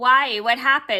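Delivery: ordinary talk, nothing marked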